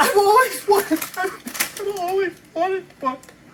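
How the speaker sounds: crying through words, very high tearful voice. Opening a gift at a Christmas party: crying while talking. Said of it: "are you crying?".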